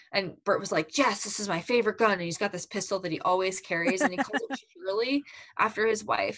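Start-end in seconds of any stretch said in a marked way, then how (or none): 1.0-2.2 acted gravelly elderly voice. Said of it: "this epic, like, old man gruff voice".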